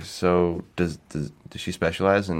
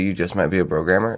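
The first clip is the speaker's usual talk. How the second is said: ordinary delivery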